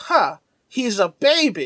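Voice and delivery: mock condescending, unimpressed, slow, dismissive tone. Recapping a cartoon episode, the speaker quotes Mako, mock-dismissive tone. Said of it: "He says it in such a dismissive tone".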